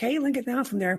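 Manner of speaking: high yell. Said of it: "I yelled again".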